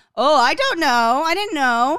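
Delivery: slow, mock feigned cluelessness, all innocence. Retelling how a line-cutting lady played dumb: imitating someone playing dumb. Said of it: "the lady tried to play dumb".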